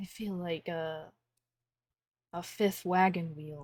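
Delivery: hushed, whispered aside. Player voicing Hirith, who leans over to whisper to Rieta, leaning over whispering. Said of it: "lean over and whisper to Rieta".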